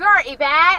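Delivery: Bristolian accent. Asked to say the line in their best Bristolian accent, Bristolian accent. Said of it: "In your best Bristolian accent, say it".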